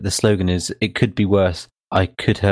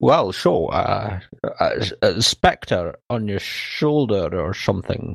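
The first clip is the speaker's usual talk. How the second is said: very slow put-on movie-star voice, every word stretched out. Retelling a villain walking up to Bond: Sean Connery impression. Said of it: "your Sean Connery impression".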